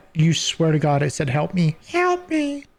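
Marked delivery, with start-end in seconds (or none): 1.3-2.6 screechy bat voice, very high. Game master voices a bat a player hears calling out: bat screeching. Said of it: "you heard a bat screech".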